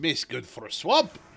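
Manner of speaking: weird put-on Russian ogre accent. Teased over his accent, he repeats the line: half Shrek, weird Russian accent. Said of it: "half Shrek on that, in addition to like a weird Russian accent".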